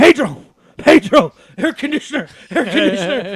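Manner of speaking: freaked-out, panicked, repeated yelling. Retelling yelling on a bus for the air conditioner: imitating own past yelling. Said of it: "and I'm yelling".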